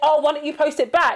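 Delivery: ordinary delivery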